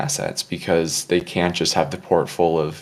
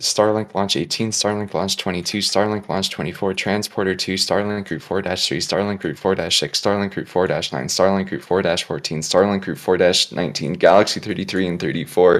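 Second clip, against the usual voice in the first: breathless, nonstop, rapid-fire rattle, all one breath; 4 dB louder than usual. Taking a challenge to rattle off a list all in one breath. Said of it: "I'll try for one breath".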